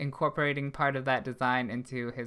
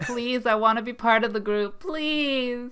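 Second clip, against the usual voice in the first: very high, loud, begging pleading; 10 semitones higher, 5 dB louder than usual. Imitating a show character begging to join the group: imitating the character pleading. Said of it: "when you do that voice, you sound exactly like him".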